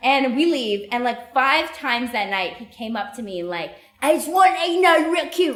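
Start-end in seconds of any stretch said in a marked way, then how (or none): 4.0-5.6 poor, put-on British accent, pitched up. Retelling a man who approached the speaker five times that night, in a bad British accent. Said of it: "I don't have a good British accent".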